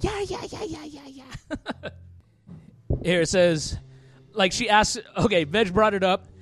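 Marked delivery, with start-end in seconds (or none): 0.0-1.9 put-on soft, high-pitched German accent. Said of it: "this voice in the background going".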